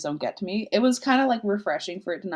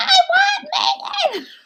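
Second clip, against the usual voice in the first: put-on very high, swooping little girl's scream; 7 dB louder than usual. Retelling a therapy session, the speaker voices the little girl, retelling her screaming. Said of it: "she's like screaming".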